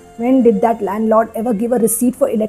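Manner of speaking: plain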